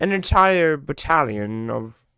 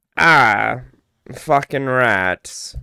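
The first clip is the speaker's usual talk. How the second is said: exclaimed, barking video game hero voice; 4 dB louder than usual. Reading game item names, trying a Vermintide character's voice: Victor Saltzpyre impression. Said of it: "I wonder if I can do Sawspy's voice".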